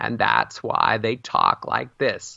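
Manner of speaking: squeaky-hinge creak, vocal fry, breathy and hushed. Speaker explaining how people hold their breath when speaking, demonstrating vocal fry. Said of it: "This what's called a vocal fry or a squeaky hinge".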